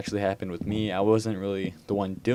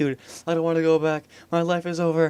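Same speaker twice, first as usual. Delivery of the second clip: put-on terrified voice, high-pitched and trembling; 8 semitones higher, 4 dB louder than usual. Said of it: "just completely shaking at this point".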